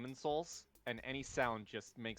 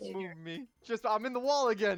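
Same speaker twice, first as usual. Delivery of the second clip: panicky voice, higher and louder; 9 semitones higher, 10 dB louder than usual. Asking to be moved after getting stuck in the wall: panicked. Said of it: "The absolute panic in your voice".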